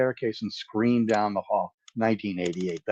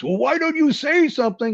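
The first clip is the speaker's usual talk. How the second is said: very high, loud screaming; 3 dB quieter than usual. Recalling his father screaming at him at four years old, retelling a father's screaming. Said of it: "he's screaming at you and he says".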